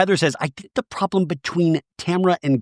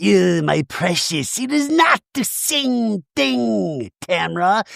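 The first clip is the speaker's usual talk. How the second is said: put-on creepy creature voice; 3 semitones higher than usual. Retelling a reality show argument in a Gollum voice. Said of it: "like Gollum in Lord of the Rings".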